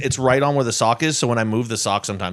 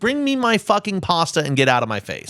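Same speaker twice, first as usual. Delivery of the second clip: put-on loud, swooping Italian accent; 7 semitones higher than usual. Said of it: "They're just sitting there being all loud".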